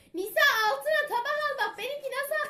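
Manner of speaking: high-pitched, loud shouting.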